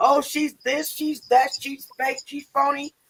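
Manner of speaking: mild, high-pitched ranting. Retelling how Auntie Leah reacted after going back: imitating Auntie Leah screaming. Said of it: "she's screaming and yelling".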